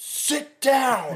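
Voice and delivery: high, loud shouted yell. Retelling a duck hunt, yelling at a buddy who stood up: imitating own past yell. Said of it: "And I just yelled".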